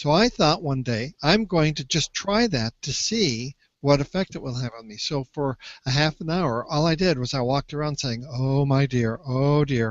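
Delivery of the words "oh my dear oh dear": put-on mournful voice, much slower. Recalling their own experiment of walking around repeating it, in a put-on mournful voice. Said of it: "in a very mournful kind of voice".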